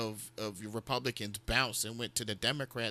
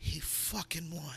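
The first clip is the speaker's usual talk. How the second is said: play-acted weepy, tearful voice, speaking through tears; 6 semitones higher, 5 dB quieter than usual. Retelling waking at night to a wife crying in bed: imitating someone crying. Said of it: "she's sitting there crying".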